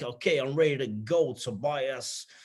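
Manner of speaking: put-on very thick, heavy New York accent, slow. Retelling what a man said when he came back on LinkedIn one night, very thick New York accent. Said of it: "very, very thick New York accent".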